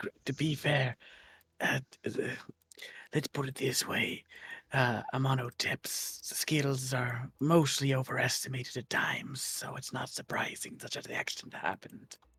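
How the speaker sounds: hushed character whisper. Grimrock leans over to the mirror and speaks, whispering very quietly. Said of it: "whispering this as quietly as I can".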